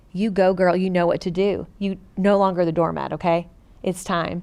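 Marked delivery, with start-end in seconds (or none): none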